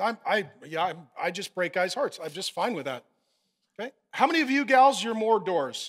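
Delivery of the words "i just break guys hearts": mock stammering, much lower. Addressing women in the audience, voicing one who likes dumping guys, imitating someone stammering.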